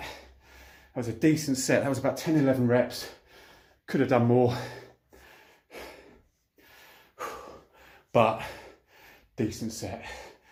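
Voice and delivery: winded, catching breath. Just after finishing a set of shoulder exercises, catching breath. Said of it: "Catch my breath after that".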